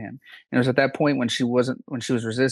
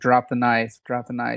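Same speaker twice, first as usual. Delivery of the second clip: normal talking voice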